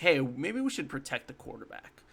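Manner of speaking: plain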